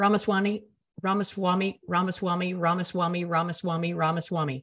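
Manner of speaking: ordinary talk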